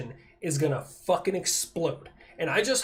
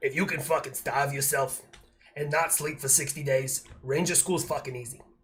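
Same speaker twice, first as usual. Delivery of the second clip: put-on Boston accent, sergeant style; 4 semitones lower, 3 dB quieter than usual. Quoting his old platoon sergeant about ranger school: sergeant's Boston accent. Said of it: "I gotta do it with his Boston accent".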